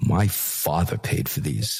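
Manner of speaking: acted, offended, indignant, put-out tone. Retelling her answer in an interview: imitating an indignant reply. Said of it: "She looks at me indignant".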